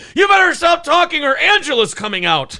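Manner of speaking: mock shrill enraged shriek, very high and loud. Retelling what she said when she went ape shit: imitating someone going ape shit. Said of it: "She went ape shit".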